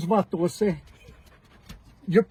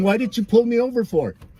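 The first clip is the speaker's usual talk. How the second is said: plain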